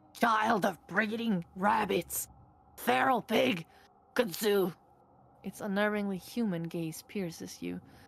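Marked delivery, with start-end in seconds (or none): 0.1-4.7 broken, halting, raspy monster voice. Narrator voicing a talking horror addressing the player, halting, rasping voice. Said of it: "They address you in a halting, rasping voice".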